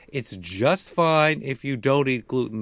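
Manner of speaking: ordinary delivery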